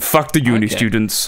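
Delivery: imitated announcement voice. Acting out the expected lockdown speech when asked to: imitating the speech-giver. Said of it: "do it in his voice".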